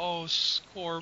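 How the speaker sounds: put-on loving tone. Show the other person how they say the nickname, imitating their hint of love. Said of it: "you say it with this ... Hint of love".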